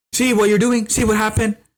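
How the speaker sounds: very high-pitched, scolding yell. Retelling how a mom yelled at her kids on a flight: imitating a mom yelling. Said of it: "the mom freaked and started yelling at them".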